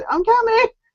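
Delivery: very high, desperate cry. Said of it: "when you die and I have to come save you, it's".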